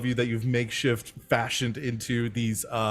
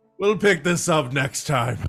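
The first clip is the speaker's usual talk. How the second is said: yelling loudly; 4 semitones higher, 4 dB louder than usual. Voicing a captain calling across to the players' ship: yelling across to another ship. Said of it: "and yells out at you".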